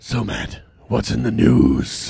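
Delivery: rough, grumbly superhero voice. Speaker tries out voice options and addresses Matt, rough, grumbly superhero voice. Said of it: "the superhero voice. the rough and tough, grumbly".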